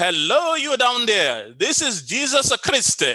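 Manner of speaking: put-on Italian accent, slow, swooping, drawn out. Retelling a prank on a praying lady, in the prankster's italian accent. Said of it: "in his Italian voice".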